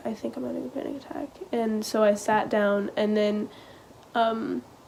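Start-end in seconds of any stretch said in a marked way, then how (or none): 0.0-1.3 very hushed, hurried murmur under the breath. Recalling first telling him, not wanting to make a scene: really quiet voice. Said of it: "I was really quiet and I was like".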